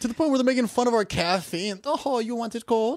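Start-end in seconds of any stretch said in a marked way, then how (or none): 1.8-3.0 unplaceable, vaguely Italian, put-on accent. Mocking how people in other countries tease Americans, attempted Italian accent. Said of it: "I don't even know what accent that was".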